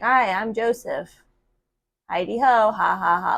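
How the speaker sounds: slow voice like a talking doll. Imitating how Chucky talks in doll form: imitating Chucky doll talking. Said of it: "He'll be like".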